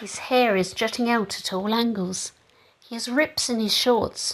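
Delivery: ordinary delivery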